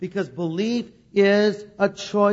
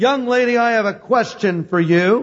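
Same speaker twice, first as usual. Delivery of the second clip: mock large, loud, resounding booming call; 2 semitones higher, 6 dB louder than usual. Retelling a man in a crowd addressing a young woman speaker: large booming voice. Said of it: "with a large booming voice".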